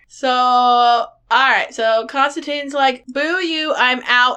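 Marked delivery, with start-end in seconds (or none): 3.1-4.4 put-on grumpy voice. Summarizing a movie, quoting Constantine: imitating grumpy Constantine. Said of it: "he's all grumpy".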